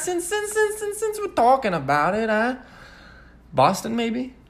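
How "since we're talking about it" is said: put-on Jamaican accent, much higher, quieter. Trying out a Boston accent that comes out sounding Jamaican. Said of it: "That was actually Jamaican".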